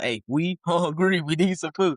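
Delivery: slow, somewhat aggressive, pushy, insistent tone. Retelling the second knock at the door: imitating a more aggressive tone. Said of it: "it may be a little bit more aggressive".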